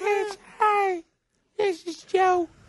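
very high-pitched, drawn-out voice. Showing how the impression should sound: higher-pitched Joe impression. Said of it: "You gotta get more up here like this".

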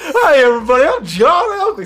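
put-on announcer voice. Voicing a new elk character introducing himself: Harry Caray voice. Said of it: "sounds like legendary announcer Harry Carey".

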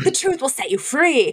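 put-on flawless Irish accent. Retelling a tv scene where a priest speaks, imitating an irish priest accent. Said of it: "an Irish priest doing a flawless Irish accent".

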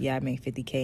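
low, subdued tone. Acting out the guy in a couple, in a lower tone voice. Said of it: "he kind of says it in a lower tone voice".

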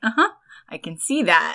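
put-on, mocking teasing tone. Retelling a show scene where a character teases another: imitating a teasing tone. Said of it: "just totally teasing him".

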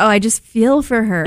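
ordinary delivery

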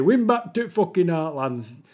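put-on northern Yorkshire accent. Talking about Keir and the left with Jeff, the speaker uses a put-on Yorkshire accent. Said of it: "that's a Yorkshire accent".

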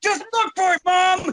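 very high, fed-up, angry shout. Retelling a quarrel with mom: imitating angry yelling. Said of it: "Why you get mad at your mom".

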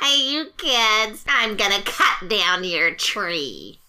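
put-on imitation of a woman's voice. Talking about a woman and acting her out: imitating a woman's voice. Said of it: "I have fun doing her voice".

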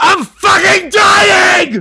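all-out scream, very high-pitched and very loud. Retelling shouting in a receptionist's face to see the doctor: retelling a yell, full volume. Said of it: "as loud as I can".

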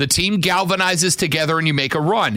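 ordinary talk

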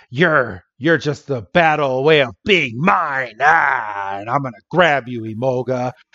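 pirate voice with a long, stretched "ah". Retelling how Bianca imagines grabbing Imoga: pirate voice as Bianca. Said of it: "when did Bianca turn into a pirate?".

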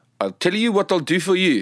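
performed South African accent. Showing another speaker what the south african accent sounds like: put-on south african accent. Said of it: "can you do that one?".

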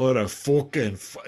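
put-on tough Scottish woman's accent. Describing how women with Scottish accents sound, doing a woman's Scottish accent. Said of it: "when you hear a woman speak with a Scottish accent, she's like".

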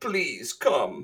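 put-on Russian-ish accent. Redoing a praised impression of Brian, in an almost Russian accent. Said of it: "It's like kind of like Russian almost".

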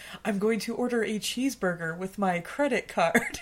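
slow, typical mocking put-on American accent. Quoting people making fun of American accents: mock American accent. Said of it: "so the typical making fun of American accents".

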